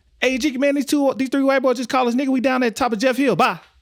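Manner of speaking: put-on frantic, high, hurried and rushed voice. Retelling a friend's phone call asking for help: imitating a frantic friend. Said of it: "He's like, in frantic".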